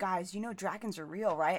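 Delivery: ordinary talk, nothing marked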